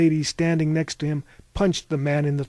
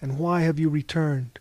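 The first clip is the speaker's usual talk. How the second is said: plain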